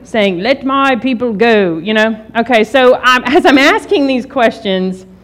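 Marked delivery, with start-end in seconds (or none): 0.3-1.7 put-on spoken in a British accent. Recalling a line from a movie about the Exodus: Charlton Heston impression, British accent. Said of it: "you hear Charlton Heston".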